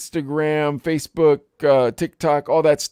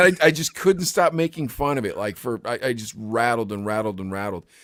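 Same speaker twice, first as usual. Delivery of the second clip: plain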